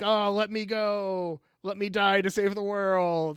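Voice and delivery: desperate, high-pitched pleading beg. Retelling a made-up scene where she begs him to let her go: imitating someone begging.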